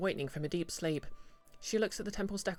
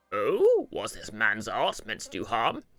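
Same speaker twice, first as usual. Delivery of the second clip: very loud, booming, swooping judge character voice; 7 semitones lower, 8 dB louder than usual. Game master voicing a character who questions Evold: judge voice. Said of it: "I chose the uh, judge voice for this guy".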